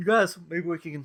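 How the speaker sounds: high-pitched words spoken right through a yawn. At the end of a long day, suggesting the others go search for it: yawning. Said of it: "I'm yawning".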